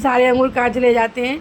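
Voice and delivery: ordinary talk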